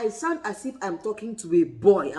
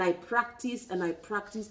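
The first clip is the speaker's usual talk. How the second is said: ordinary delivery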